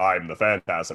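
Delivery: deep, low cartoon villain voice. Retelling how a cartoon villain announced itself: imitating a deep voice. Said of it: "some dude with a deep voice".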